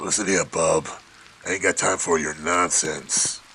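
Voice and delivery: gruff, grizzly voice of an aged cigar smoker. Showing how the game character should sound: grizzly voice of old cigar smoker. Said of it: "a hundred-year-old man who still smokes cigars".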